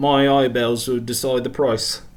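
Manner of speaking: put-on British shopkeeper voice.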